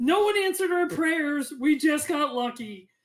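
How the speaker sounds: mild yell, called out. Voicing a character in a shared story, the speaker is yelling. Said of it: "Gulliver then yells".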